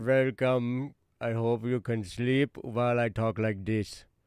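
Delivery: Indian accent with a German tinge. Greeting viewers at the start of Don't Worry Wednesday, Indian accent with German tinge. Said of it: "I speak Indian with a German accent".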